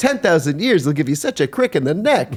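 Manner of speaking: put-on New York Brooklyn-style accent.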